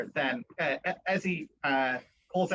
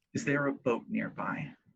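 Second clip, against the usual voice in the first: even, steady, calm, measured and unhurried; 3 semitones lower than usual. Voicing a character in a role-play scene: measured and calm. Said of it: "she says very measured and calmly".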